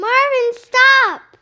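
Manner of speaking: very loud, high-pitched, urgent yell. Narrating a story, Nick yells at Marvin as he lunges at the door: yelling. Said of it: "Nick yelled".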